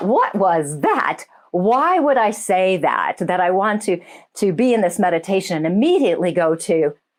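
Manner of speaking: plain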